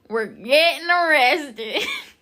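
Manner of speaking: very loud, high, put-on Southern accent. Speaker retells filming a video with their cousin: put-on accent. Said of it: "with that accent".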